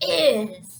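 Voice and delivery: cranky, grouchy, grumbling bear voice. A teacher has the class say a word like grouchy bears: like a very grouchy bear. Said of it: "say this word like very grouchy bears".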